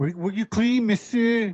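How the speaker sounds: put-on Albuquerque local accent. Pretending to be an Albuquerque parrot: Burqueño accent. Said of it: "the accent of, like, the Burqueño".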